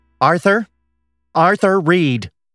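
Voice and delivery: angry shout. A girl charging up from behind calls after a boy on the school steps, angry shout. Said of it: "an angry voice shouted behind them".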